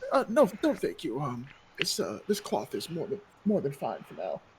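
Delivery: teary, just-been-crying, polite woman's voice. Voicing a woman who has been crying, declining a handkerchief: tearful woman's voice. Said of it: "she has been crying, like, her face is red".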